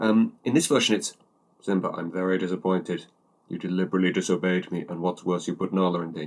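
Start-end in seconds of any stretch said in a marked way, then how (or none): 1.6-6.3 imitated emotionless, flat line delivery. Comparing two versions of a film scene, mimicking James's flat emotionless read. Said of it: "it's like no emotion behind it at all".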